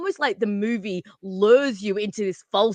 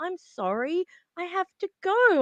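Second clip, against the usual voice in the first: very high, very slow, mock bewildered confused voice; 9 semitones higher than usual. Retelling a movie scene, imitating confused Helen. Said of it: "she's all confused".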